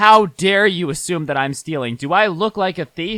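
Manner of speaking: acted, affronted, indignant woman's outburst. Retelling a customer's reaction to being asked for her ticket: imitating an offended woman. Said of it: "she gets all offended".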